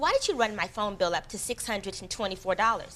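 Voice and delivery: ordinary talk, nothing marked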